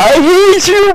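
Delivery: mock high, loud crying shouts.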